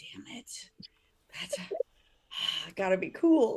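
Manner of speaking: very slow, drawn-out whispered mutter under the breath. Retelling what Whitney said under her breath: imitating muttering. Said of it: "under her breath".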